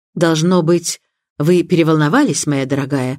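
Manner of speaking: ordinary delivery, nothing marked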